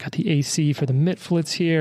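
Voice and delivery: ordinary talk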